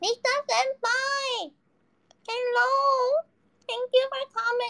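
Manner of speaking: very high, slow, talking while chewing, mouth full. Speaker talks while eating, talking while chewing. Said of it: "I'm eating. I'm sorry, I'm chewing".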